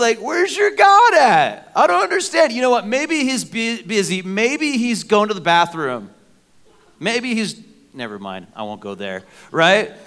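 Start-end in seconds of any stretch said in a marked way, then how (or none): 0.2-6.1 put-on mocking taunting tone, higher. Retelling how Elijah taunted the Baal worshipers: mocking as Elijah. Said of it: "And he's just mocking them".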